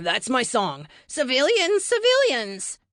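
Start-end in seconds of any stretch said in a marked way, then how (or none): 1.1-2.8 loud, squeaky, mocking high voice, climbing upward. A tired teammate echoes a warning heard over the comms, in a mock high-pitched voice. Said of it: "he said in a mock high-pitched voice".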